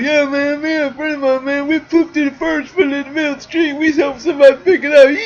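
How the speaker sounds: put-on play-acted drunk man, pitched very high. Retelling what a man who walked out the door told you, imitating a drunk man. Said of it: "he's drunk by the way".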